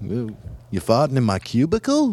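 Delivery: put-on rising intonation. Retelling someone's bit where everything sounds like a question, imitating question-like rising intonation. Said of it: "Sounds like a question".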